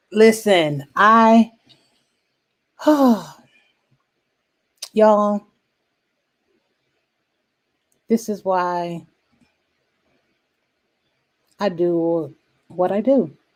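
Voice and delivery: trying not to cry, holding back tears. Thanking listeners before asking for donations, holding back tears. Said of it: "I'm trying not to cry".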